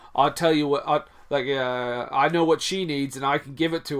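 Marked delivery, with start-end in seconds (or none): none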